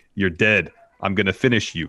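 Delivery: ordinary delivery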